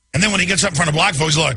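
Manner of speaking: plain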